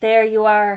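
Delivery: taunting tone. Hamish Bigmore taunts someone who was told he couldn't do it, jeering. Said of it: "jeered Hamish Bigmore".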